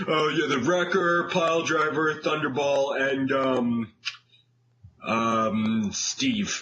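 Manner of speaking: hesitant, halting, stalling delivery with long drawn-out um. Imitating the other speaker listing villains: imitating the other speaker's voice. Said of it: "was that your impersonation of my voice?".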